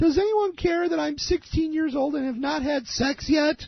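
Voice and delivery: very high screaming at the top of lungs. Retelling a kid on a tv show screaming: imitating a kid screaming. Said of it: "screaming at the top of his lungs".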